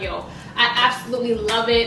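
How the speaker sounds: plain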